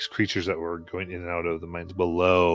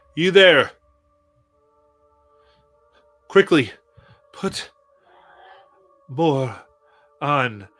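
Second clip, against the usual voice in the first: very loud, booming, high, commanding tone; 8 semitones higher, 8 dB louder than usual. Voicing a character giving orders in a narrated game scene: loud voice. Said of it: "in this loud voice".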